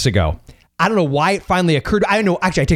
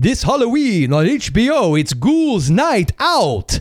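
put-on goofy, silly Transylvanian vampire accent, pitched up; 5 semitones higher than usual. Recalling a Halloween promo on HBO that you recorded, do it in a silly Transylvanian Bela Lugosi voice. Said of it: "Transylvanian Bella lugosi type voice going".

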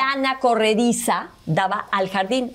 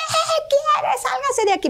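mock shrill, high, startled, frightened yell. Retelling yelling at a man approaching after leaving the bathroom, retelling a frightened shout. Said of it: "nada más le grité".

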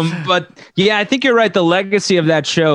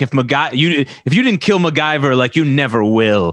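put-on dark, doom-laden, foreboding delivery; 4 semitones lower than usual. Retelling what a villain tells her henchman: imitating an ominous line. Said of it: "really, like, ominous".

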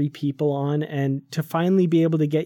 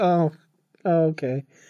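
put-on breezy, casual, unbothered, offhand tone. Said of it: "just like".

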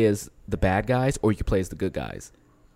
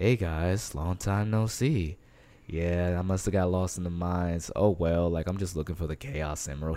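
put-on chill cool voice, lower and quieter; 3 semitones lower, 6 dB quieter than usual. Describing a game character's voice, imitating Knuckles' chill voice. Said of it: "his voice is just very like".

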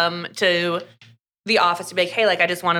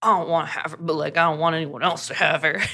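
put-on grumbling voice. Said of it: "grumbling to himself".

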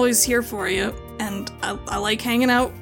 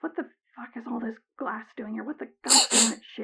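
quiet muttered cursing under breath; 6 dB quieter than usual. People on the dark road below, heard from above: cursing under their breath. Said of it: "cursing under their breath".

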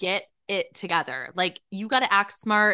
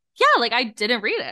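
breezy, nonchalant, casual offhand tone, acted. Retelling what a friend said about not reading it: imitating a casual tone. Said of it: "she says it so, like, casually".

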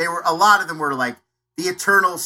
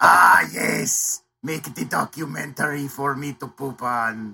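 put-on German puppet voice, lower pitch; 4 semitones lower than usual. Doing their own Herzog impression: Herzog impression as Triumph the Insult Comic Dog. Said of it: "my Herzog is basically just a German Triumph the Insult comic dog".

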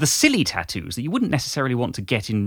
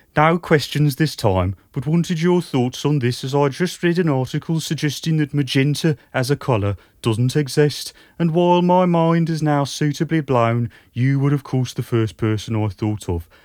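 put-on Brummie accent, pitched higher; 3 semitones higher than usual.

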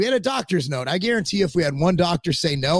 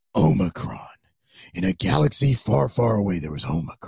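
very low, deep movie-trailer narrator voice; 7 semitones lower than usual. Suggesting how the media should say Omicron, the speaker does a movie voiceover announcer voice. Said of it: "say it like the guy who, like, you know, does the voiceovers".

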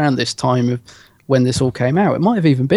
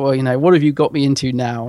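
put-on sarcastic police officer voice. Retelling a scene where the Brigadier follows into a tunnel: sarcastic Brigadier impression. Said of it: "he's being really sarcastic as he's like".

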